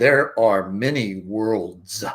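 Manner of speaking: mock huge booming voice that fills the room. Retelling the voice he heard as a child, in a big booming voice. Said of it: "this big booming voice".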